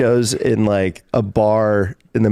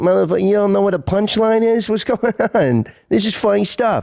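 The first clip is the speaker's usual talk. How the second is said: put-on New York accent, pitched high; 10 semitones higher than usual. Retelling how a buddy acted at an open mic, in a put-on New York accent. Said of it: "just started talking in New York accent".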